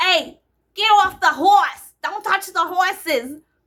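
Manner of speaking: put-on very loud, barking, yelled Boston accent. Retelling what another cop from Boston said, in a Boston accent. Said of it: "or with a Boston accent".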